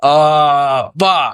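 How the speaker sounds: loud meme-style outburst curse with long stretched "uh". Imitating a reaction gif after sounding like it: imitating a reaction gif. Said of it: "I just sounded like that gif that's like".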